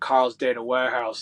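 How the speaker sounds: loud, bad put-on American accent. Quoting his line manager, who is American, with a poor American accent. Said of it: "apologies for the poor American accent there".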